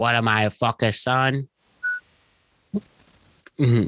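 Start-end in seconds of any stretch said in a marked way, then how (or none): 0.0-1.5 failed, bad attempt at a Boston accent. Quoting a movie line in a Boston accent: failed Boston accent attempt. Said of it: "I failed attempt at a Boston accent".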